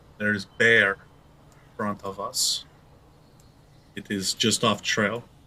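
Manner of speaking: quiet low voice, not whispered. Turned back toward the party to address everybody, in a low voice. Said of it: "but just in a low voice".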